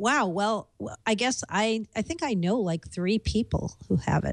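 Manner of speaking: ordinary talk, nothing marked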